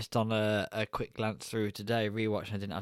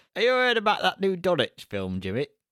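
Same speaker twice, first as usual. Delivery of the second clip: put-on loud, high-pitched granddad voice. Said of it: "That's what my granddad would say".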